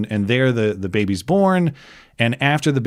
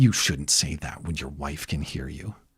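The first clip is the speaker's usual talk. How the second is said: voice dropped a little, lowered and hushed; 8 semitones lower, 8 dB quieter than usual. Retelling what a woman told him after his wife's easy birth; retelling a lowered voice. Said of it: "she lowers her voice a little bit".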